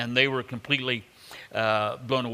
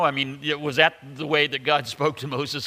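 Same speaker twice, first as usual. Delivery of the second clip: usual speaking voice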